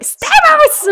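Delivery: very high, loud shrieking yell. Unable to see the name without yelling it: yelled name Stamos. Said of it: "I actually can't see the name Stamos without yelling".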